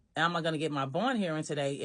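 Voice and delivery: ordinary talk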